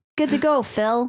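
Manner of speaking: fake, put-on Wisconsin accent, done badly. Speaker tries out a line they imagined, in a bad Wisconsin accent. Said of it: "The only thing I can say in a Wisconsin accent".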